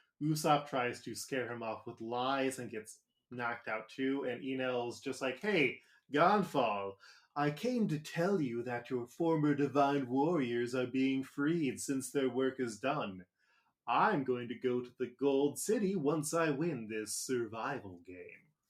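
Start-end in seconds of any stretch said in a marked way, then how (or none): 5.4-18.4 heavily smarmy delivery. Retelling an anime scene, imitating the English dub Enel voice, smarmy. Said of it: "my impression of the American, uh, Enel voice".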